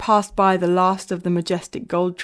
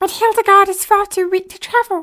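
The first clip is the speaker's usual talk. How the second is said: very high helium voice, loud, rattled off bullet-fast; 13 semitones higher, 6 dB louder than usual. Narrating a chapter, voicing Fluffle's exclaimed line: Fluffle's helium voice, very fast. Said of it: "exclaimed Fluffle in his helium voice, speaking as fast as a bullet train".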